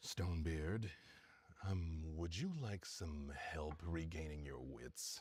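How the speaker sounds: very low, deep, distant-sounding rumble. Narrator voicing a newcomer offering Stonebeard help, deep rumbling voice. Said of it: "a deep rumbling voice that".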